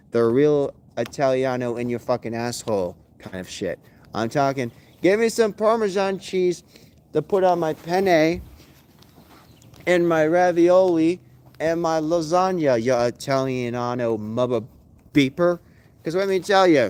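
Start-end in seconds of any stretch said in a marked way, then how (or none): none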